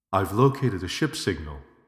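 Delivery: plain reading voice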